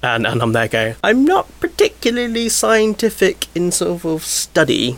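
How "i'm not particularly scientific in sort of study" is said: very high, slow, dopey idiot voice. Retelling what they said in a very scientific environment, in their idiot voice. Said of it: "I'm talking in my idiot voice".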